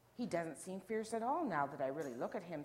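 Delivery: plain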